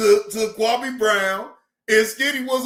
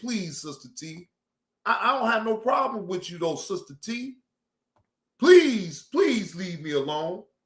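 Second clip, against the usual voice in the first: acted begging and pleading, lower and quieter; 4 semitones lower, 4 dB quieter than usual. Retelling one's own earlier words to sister t: retelling own begging and pleading. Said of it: "I was begging and pleading from the beginning".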